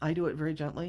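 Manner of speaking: usual speaking voice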